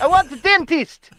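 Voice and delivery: Albanian-accented voice. Imagining someone swimming up to the harbour to ask for help, put-on Albanian accent. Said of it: "In an Albanian accent".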